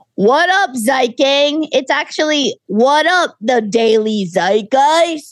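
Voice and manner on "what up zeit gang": total shock jock bro radio host tone. Speaker quotes how a host opens the show, in a mock shock jock bro tone. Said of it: "in a total shock jock bro tone".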